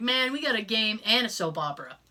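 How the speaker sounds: usual speaking voice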